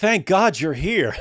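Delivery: heavy sarcasm, words dragged out. Retelling what Ben said to another speaker: imitating Ben Affleck's sarcastic tone. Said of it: "like, sarcastically".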